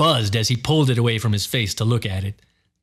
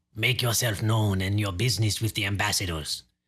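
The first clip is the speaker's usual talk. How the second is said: thin, dry, hushed vampire voice; 2 semitones lower, 6 dB quieter than usual. Reading a man within challenging a visitor at the doorway: dry, thin voice.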